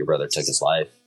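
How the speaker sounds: ordinary talk, nothing marked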